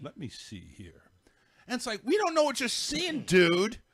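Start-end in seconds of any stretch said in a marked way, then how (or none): 0.0-1.0 very quiet, low, dull, bored host voice. Imitating a boring talk show host, in a put-on monotone voice. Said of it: "talks in a monotone voice".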